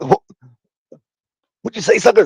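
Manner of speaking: stumbling, high delivery. Retelling a wrestling scene where the other wrestler insults him: imitating Booker T. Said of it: "then he goes".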